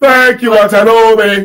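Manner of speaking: Nigerian accent at full volume. Leading the listeners to join in, saying thanks: put-on Nigerian accent. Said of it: "Put on your Nigerian voice".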